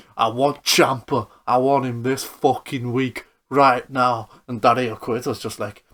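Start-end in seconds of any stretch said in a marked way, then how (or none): 0.2-4.3 put-on Birmingham accent. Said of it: "he's giving it all the Brummy accent".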